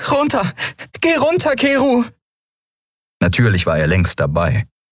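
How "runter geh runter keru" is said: very high, breathless, pleading voice. Narrator reads a woman's plea to keru as the ship lands, breathless begging. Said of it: "Atemlos bettelte sie".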